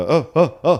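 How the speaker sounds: loud, high, scared yelling.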